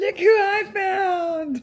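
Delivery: excited, high, loud, drawn-out call.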